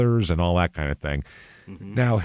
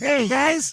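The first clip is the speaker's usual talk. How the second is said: very high, squeaky, put-on helium voice. Imitating how someone's voice sounded, say it in a helium-sounding voice. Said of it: "That's how meth should make your voice sound".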